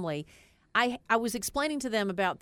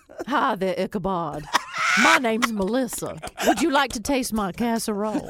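loud put-on Southern accent of middle-aged woman; 2 semitones higher, 7 dB louder than usual. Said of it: "how would you go introduce yourself".

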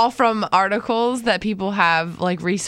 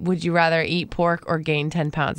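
usual speaking voice

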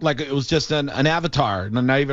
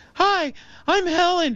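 very high feminine lady voice. Showing the doubters how Helen sounded, imitating Helen's high voice. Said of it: "but Helen sounded like this".

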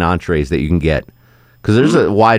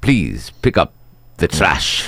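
put-on Spanish accent thrown on. Imitating a coworker putting on a Spanish accent for the cleaning crew: imitating a put-on Spanish accent. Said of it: "he throws that accent on".

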